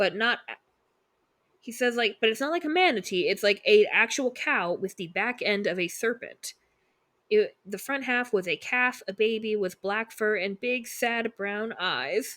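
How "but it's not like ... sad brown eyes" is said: ordinary delivery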